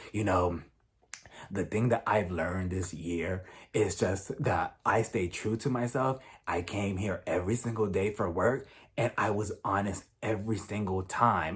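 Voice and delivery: very deep, quiet, low flat drone. Mocking how a woman spoke in her last confessional, extra deep monotone voice. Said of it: "extra, extra deep and monotone".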